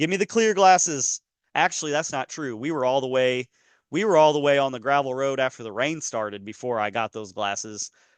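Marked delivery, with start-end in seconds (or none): 0.0-1.2 mock high hollering call. Retelling calling for clear glasses on the road: imitating own hollering. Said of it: "I start hollering at Bryce".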